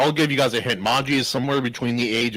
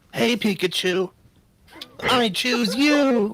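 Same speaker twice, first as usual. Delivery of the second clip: very high, slow cartoon-hero voice, every word stretched; 11 semitones higher than usual. Teasing another speaker's voice by imitating Ash Ketchum from Pokemon. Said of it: "like Ash Ketchum from Pokemon".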